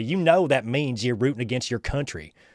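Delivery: mock smug, condescending, know-it-all lecturing tone. Retelling what a friend said about rooting against the country: imitating a condescending tone. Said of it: "the condescending way".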